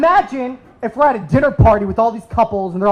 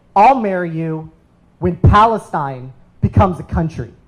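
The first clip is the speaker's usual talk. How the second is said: snarky, sarcastic delivery; 5 semitones lower than usual. Retelling her answer when asked what it would take to marry, retelling a sarcastic reply. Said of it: "she looks at me all sarcastically".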